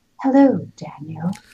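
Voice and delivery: hushed, low, soft priest-like way of speaking. Mimicking how a film character greets Daniel: imitating priestly low soft speech. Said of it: "that sort of priestly way of speaking".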